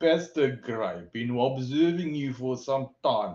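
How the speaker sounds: put-on speaking with Afrikaans accent. Retelling what a big Afrikaner policeman said to him, thick Afrikaner accent. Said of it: "Real thick accent".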